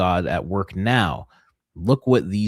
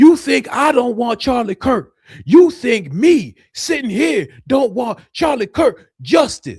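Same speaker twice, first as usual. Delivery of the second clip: very high, loud, screaming angry yelling; 7 dB louder than usual. Retelling how he spoke to his audience in a video, imitating Officer Tatum screaming and yelling. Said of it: "He's like screaming and yelling".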